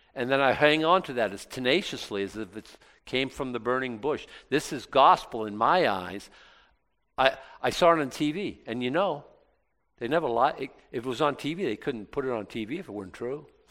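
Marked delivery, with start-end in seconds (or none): none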